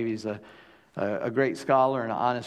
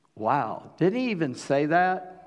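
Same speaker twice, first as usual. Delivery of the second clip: plain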